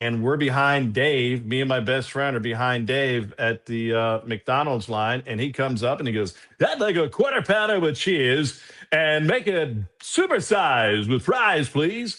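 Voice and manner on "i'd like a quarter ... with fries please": announcer-style broadcaster voice. Retelling a man ordering ahead of him at McDonald's; imitating Dave. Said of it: "that guy's got the voice and the".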